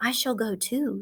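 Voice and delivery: soft-spoken. Narrator reading Charlotte's line as she interrupts the goose, softly. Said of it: "she said softly".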